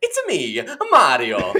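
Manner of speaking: high, loud, big, swooping sing-song hero voice. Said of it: "Why are you doing that voice?".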